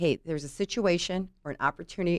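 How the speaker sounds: ordinary talk, nothing marked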